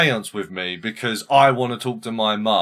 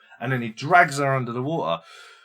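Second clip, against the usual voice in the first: ordinary talk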